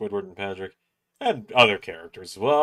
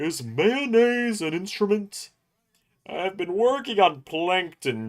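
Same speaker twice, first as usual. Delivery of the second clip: dim, dopey cartoon starfish voice, a bit high; 10 semitones higher than usual. Showing off SpongeBob character voices, doing a Patrick impression. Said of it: "I also do a pretty good Patrick".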